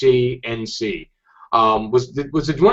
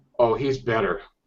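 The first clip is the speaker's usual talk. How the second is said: put-on mumbled muttering, quieter; 3 semitones lower, 7 dB quieter than usual. Retelling a fan's quiet reply about Scott: imitating muttering under breath. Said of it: "talks under his breath".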